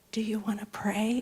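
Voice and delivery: very small, tiny, soft little voice. Recounting standing before an assembly with empty hands out, in a tiny little voice. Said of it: "In this tiny little voice".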